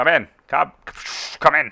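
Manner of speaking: crackling radio voice, like a field transmission. In a narrated game scene, a voice calls in over the Vox: Wavering's crackling radio voice. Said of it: "the crackling voice of Wavering coming through".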